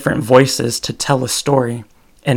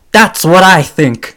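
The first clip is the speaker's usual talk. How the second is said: very loud, high yelling; 5 semitones higher, 8 dB louder than usual. Giving examples of people, the speaker is imitating Andrew Dice Clay yelling. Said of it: "Sorry for yelling".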